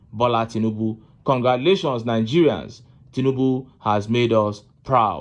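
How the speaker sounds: normal talking voice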